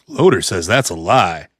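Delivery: put-on, very deep narrator voice. Cutting in on a co-host's talk about a low drop rate, in narrator voice. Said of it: "Narrator voice".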